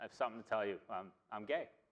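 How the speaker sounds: ordinary talk, nothing marked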